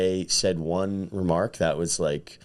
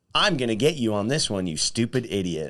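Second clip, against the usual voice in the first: mock, put-on condescending tone; 4 semitones higher than usual. Describing how a trivia question comes across, voicing it in a mock-condescending tone. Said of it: "like condescending".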